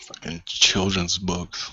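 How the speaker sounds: hushed whisper under the breath. Whispering a complaint to Rust in character: whispering in character. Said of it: "I whisper to Rust".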